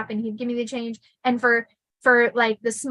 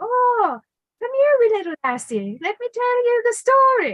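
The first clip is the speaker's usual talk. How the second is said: put-on very high, sing-song, swooping Irish lilt; 12 semitones higher, 4 dB louder than usual. Quoting a man who used to tell her stories, in a put-on irish accent. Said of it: "he would put on his Irish accent".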